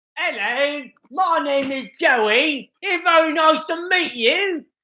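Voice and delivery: deliberately bad, high, fake British accent. Mimicking a woman who puts on an accent, in a bad British accent. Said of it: "My bad British accent".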